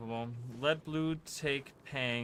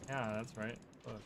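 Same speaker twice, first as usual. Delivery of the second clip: ordinary delivery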